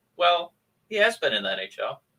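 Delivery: mimicked, flat deadpan delivery. Quoting another person's reply about a hockey player, retelling a deadpan remark. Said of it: "Jeff just total perfect deadpan".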